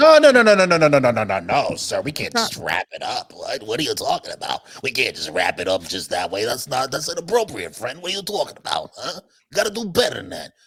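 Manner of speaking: put-on Italian-American accent. Objecting when a co-host wants to wrap up the show, mock Italian-American accent. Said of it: "don't I sound like your Uncle Vinny right now".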